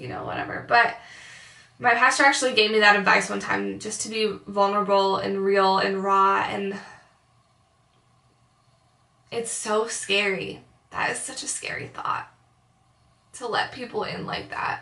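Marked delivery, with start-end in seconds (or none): 6.5-14.8 very emotional, becoming much quieter. Talking about a pastor's advice to be vulnerable, the speaker gets super emotional. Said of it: "I'm getting like super emotional".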